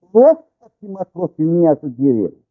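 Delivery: ordinary talk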